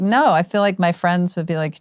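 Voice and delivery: ordinary delivery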